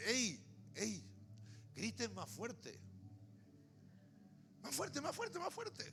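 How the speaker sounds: put-on sarcastic mocking. Retelling how he taunted eight hundred fifty prophets before the king, acting out sarcastic mockery. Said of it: "comienza a burlarse con sarcasmo de ellos".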